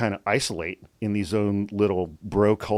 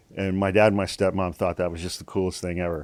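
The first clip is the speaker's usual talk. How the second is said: plain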